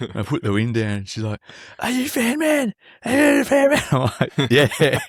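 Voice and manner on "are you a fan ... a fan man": put-on girl voice, yelling, very high. Retelling a girl coming at your car window; imitating a girl yelling. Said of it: "she's like yelling at me".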